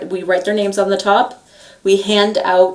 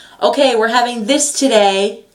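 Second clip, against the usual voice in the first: bright, high-pitched announcing voice; 3 semitones higher than usual. Speaker retells reading something off to a group, in a high-pitched, fairly loud voice. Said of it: "I go from this to".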